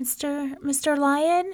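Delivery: weak, feeble, quavering, trembly high voice. A scared rabbit knocks lightly at the lion's door: weak, trembly voice. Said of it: "His voice was so weak and trembly".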